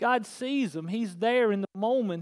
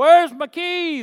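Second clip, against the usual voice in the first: very loud, high-pitched hollering; 7 semitones higher, 12 dB louder than usual. Retelling going into the house after lost keys: imitating own past hollering. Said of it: "I was hollering".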